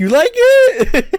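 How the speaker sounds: put-on excitement, very high and loud. Retelling a gift surprise from her: imitating someone excited. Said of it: "all excited".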